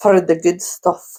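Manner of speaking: put-on Scottish accent, rolled R on "for". Asked for a Scottish accent, speaker tries it with a rolled R. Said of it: "It's that rolling R".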